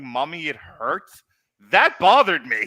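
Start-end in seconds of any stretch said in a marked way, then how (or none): 0.0-1.2 mock tearful, half-sobbing whimper. Retelling a scene from a show, imitating Ash half crying. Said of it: "Him like half crying".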